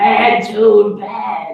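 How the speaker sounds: goofy, tiny movie-character cartoon voice. Recounting a voice he came up with from a movie, in a little put-on voice. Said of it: "I come up with this little voice".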